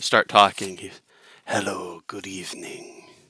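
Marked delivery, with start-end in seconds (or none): 1.5-3.0 low, soft, little sultry voice. Imitating the duo's spokesperson greeting a concert crowd, imitating a little sultry voice. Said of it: "in like the little sultry voice".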